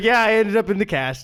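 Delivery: offhand, breezy, casual shrug-off tone. Retelling a clerk's answer about her wrist cast: imitating a casual shrug-off tone. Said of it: "just kinda shrugged it off and was like".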